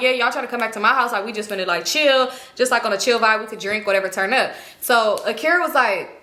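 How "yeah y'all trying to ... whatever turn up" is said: ordinary talk, nothing marked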